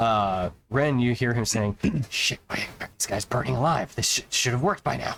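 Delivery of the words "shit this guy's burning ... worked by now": angry, cursing tone. Narrating what the players hear a cursing figure say, angry cursing tone. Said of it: "you can just hear this kind of like angry tone".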